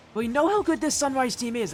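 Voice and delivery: cracked, breaking voice, cracking high. Commentating a match going into game two, voice cracking badly. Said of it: "as I just voice cracked badly there".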